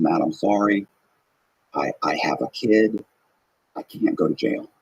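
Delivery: put-on crying, slow, tearful, begging tone. Retelling how she started crying and apologized: imitating someone crying. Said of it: "she immediately starts crying".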